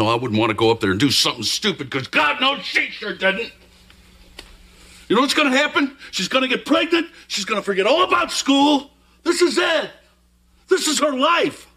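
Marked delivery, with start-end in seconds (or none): 1.9-11.5 very high-pitched screaming tirade. In a scene, one speaker argues with another about a girl's future, screaming. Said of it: "You're screaming at me".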